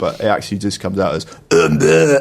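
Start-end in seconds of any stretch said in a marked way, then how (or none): 1.3-2.2 mangled, broken-up voice sample, pitched up and loud. Imitating a badly sampled game voice line: imitating bad voice sample. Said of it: "like that".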